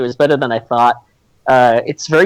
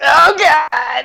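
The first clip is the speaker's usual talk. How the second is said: put-on very high, badly delivered dying cry; 12 semitones higher than usual. Recalling an Alien movie, imitating a female character being attacked, terrible dying cry. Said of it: "with like that really terrible tone of voice".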